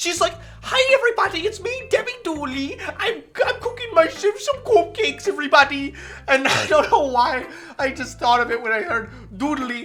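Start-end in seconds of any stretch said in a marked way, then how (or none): 0.6-5.9 put-on silly European accent, pitched much higher. Making fun of a TV show's neighbor character, Debbie Dooley silly European voice. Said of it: "had this really fucking silly European voice that I loved making fun of".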